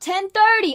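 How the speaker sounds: high-pitched, loud yelling.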